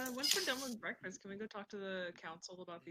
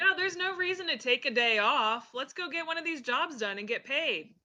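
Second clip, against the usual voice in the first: very loud, high-pitched yelling; 7 semitones higher, 12 dB louder than usual. A player speaks in character as Tav to the group, saying it really loudly. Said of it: "Tav is gonna say really loudly".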